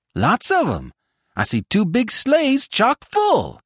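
loud, high-pitched shout rising in pitch. Seth peers through the dusk at arriving sleighs and shouts to the others. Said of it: "shouted Seth".

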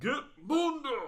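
high, slow, booming shout.

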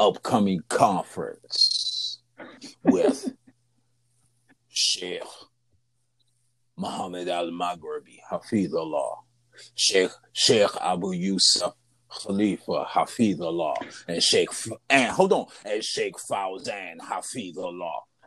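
preview announcer voice. Dropping names for an upcoming conference, using his little preview voice. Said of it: "I got to use my little preview voice".

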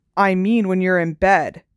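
snarling. Reading a character taunting his cousin as they walk in the dark, snarled. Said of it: "Dudley snarled".

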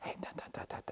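very hushed, quiet whispered aside. Showing how people whisper to the person beside them: whispering. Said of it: "If I whisper like this".

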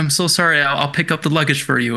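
ordinary talk, nothing marked

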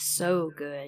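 usual speaking voice

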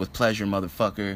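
ordinary talk, nothing marked

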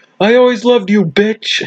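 mock shrill, very high-pitched screamed line. Retelling the ending of They Came Together, imitating Michael Shannon screaming. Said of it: "just screams at Amy Poehler".

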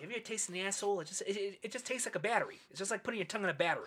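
put-on thick, heavy New England accent. Retelling what a former roommate used to say, in a thick New England accent. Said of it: "really thick New England accent".

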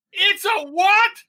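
put-on shrill, very high shouting. Retelling watching Leia's line in the cinema, retelling yelling back at the screen. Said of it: "And I yelled back at the screen".

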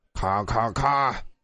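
resonant, ringing voice. Reading a story, the director calls cut to stop filming: loud, booming call. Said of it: "用洪亮的声音叫大家暂停".

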